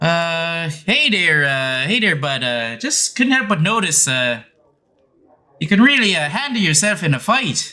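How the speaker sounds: high character voice, hesitant and halting, with uhs. Voicing Fargo approaching a player after a tavern brawl: voicing Fargo. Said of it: "Fargo kind of walks up to you and he's just like".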